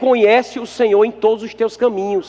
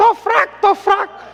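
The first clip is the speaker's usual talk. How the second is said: much higher guinea fowl call impression; 10 semitones higher than usual. Telling listeners how the guinea fowl talks, imitating a guinea fowl call. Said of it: "Já viu a galinha da Angola? Ela fala é assim".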